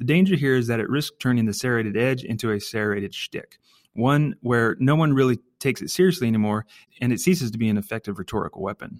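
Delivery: ordinary delivery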